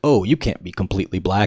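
ordinary talk

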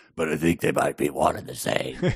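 low, gravelly voice. Narrating a novel, voicing Strathmore's line in his gravelly voice. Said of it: "Strathmore said in his gravelly voice".

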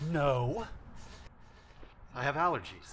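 slow, teary, defensive delivery through tears. Character asked if they're crying denies it: teary denial. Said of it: "so you're allergic to being a big baby?".

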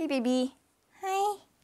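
put-on high-pitched, cooing baby-talk voice. Breaking off from describing a story to say hi, in a baby voice. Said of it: "*baby voice*".

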